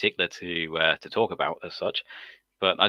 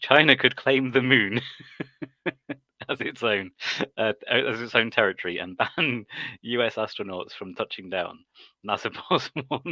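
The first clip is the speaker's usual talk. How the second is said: speaking through barely held-back laughs; 4 semitones higher than usual. Reading a news headline aloud to viewers, laughing while reading. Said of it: "I can barely read it without laughing".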